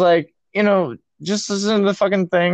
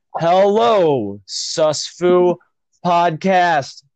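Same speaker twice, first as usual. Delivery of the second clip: slow, robotic, every syllable spelled out. Showing how to greet a podcast audience: slow, every syllable overenunciated. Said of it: "You have to talk like a robot and talk kind of slow".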